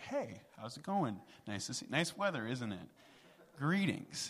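understated, casual, offhand, high-pitched delivery.

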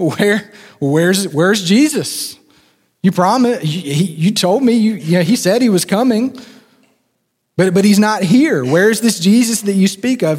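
scoffing, sneering, sarcastic, stumbling mockery. Acting out mockers doubting a promised return: imitating sarcastic mockers. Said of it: "you can kinda hear their sarcasm".

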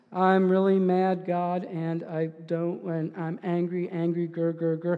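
low, flat, very drawn-out monotone. Showing how an angry Bible prayer can sound when read: flat monotone delivery. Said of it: "it just sounds really flat, sounds really monotone".

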